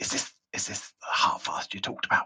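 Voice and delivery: very quiet whisper. A figure hidden in shadows looks up and asks about someone; whispering really quietly. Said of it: "And he whispers really quietly".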